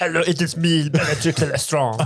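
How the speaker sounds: put-on French accent. Joking about a French-accented version of a character, speaking as her: French-accented Bellatrix Lestrange voice. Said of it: "It's the French orc".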